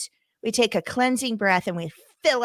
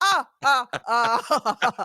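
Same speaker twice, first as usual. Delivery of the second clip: put-on vampire count voice. Imitating someone who acts like the Count from Sesame Street: Count voice. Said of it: "She's acting like the Count from Sesame Street".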